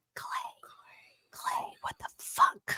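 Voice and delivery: very quiet, breathy whisper under the breath. Retelling what a woman whispered to a man, imitating her whisper. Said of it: "whispers in her in her voice".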